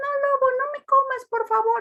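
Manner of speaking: very high, pleading, begging storybook character voice. Showing how to change voices for characters when reading: Caperucita voice. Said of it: "cambiar los personajes".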